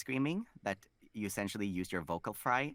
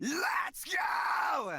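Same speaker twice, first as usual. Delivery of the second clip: high, pitched-up, excited shouting scream with vocal fry; 3 dB louder than usual. Retelling shouting during Mario Party: retelling an excited fry scream. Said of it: "I just shout-, and shouted".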